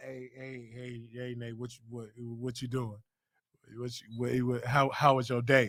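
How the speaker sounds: fake, very low, deep flirty voice. Acting out own flirting on the phone with a crush: put-on deep flirty voice. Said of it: "trying to make my voice deep".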